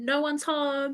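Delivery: disguised high voice, very loud. A character calling out through a door, in a higher-pitched disguised voice. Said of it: "like a higher pitched voice".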